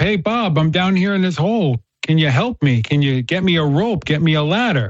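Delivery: mock restrained, held-back calling voice. Retelling a story of a man stuck in a hole: acted screaming up for help. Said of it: "he's screaming up".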